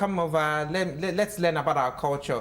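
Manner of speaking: normal talking voice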